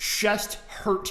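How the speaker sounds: plain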